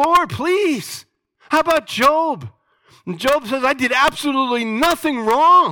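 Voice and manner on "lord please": very high-pitched, pleading, begging outcry. Speaker retells the Apostle Paul begging the Lord, Paul crying out, begging. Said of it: "I cried out".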